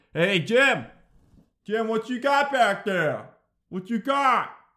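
loud, high-pitched hollering.

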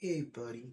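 put-on mopey voice, barely audible, very quiet, sad. Retelling how a friend sounded on a night call: imitating Monkey sounding sad. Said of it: "Sounded all sad, bro".

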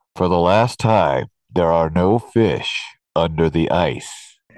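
big, booming, thundering voice. Telling a joke, an unseen voice speaks to a man drilling the ice, booming. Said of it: "hears this booming voice say".

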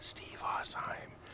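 put-on whisper. Retelling a moment mid-set with a fellow performer, retelling a whisper. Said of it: "he just whispers".

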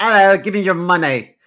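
put-on very loud, high-pitched British accent. Retelling an imagined mugging: imitating a British mugger. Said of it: "mug me with a British accent".

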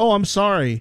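startled, blurted out high and loud.

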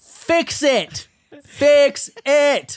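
mock shouting, very high, very slow, shrill, drawn-out. Retelling how a woman threw food on the pass-through at the cook, retelling a yell. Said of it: "throws it on the pass-through and yells at the cook".

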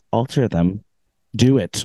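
mock cold, icy tone. Recapping a scene, quoting one character's order to another, mock-cold command. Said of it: "She says it so coldly".

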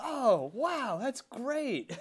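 patronizing, condescending, very high, slow, very drawn out. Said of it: "talking to him like they're children".

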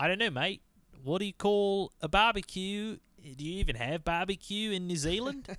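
fake Australian accent. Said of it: "that's the same accent".

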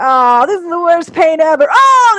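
high, loud, rhythmic acted ows and pained groaning. Retelling how a voice actor recorded a pain vocal: imitating Dan's pained groaning. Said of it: "doing these, like, rhythmic ows".

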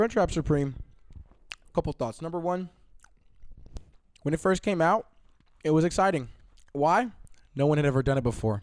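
talking with mouth full. Sharing a crunchwrap with friends, talking with mouth full. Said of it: "I'm going to talk with my mouth full here".

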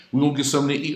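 mock showy eager voice.

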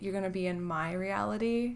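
usual speaking voice

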